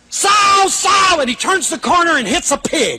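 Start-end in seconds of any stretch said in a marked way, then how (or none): 0.1-1.2 loud, high-pitched screaming. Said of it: "and he screams back at her".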